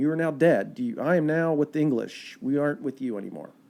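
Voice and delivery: ordinary talk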